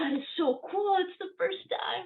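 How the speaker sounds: squealing very high, hyped-up excited gush. Speaker acts out people reacting to her recording: imitating hyped excitement. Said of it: "And they're like so hyped".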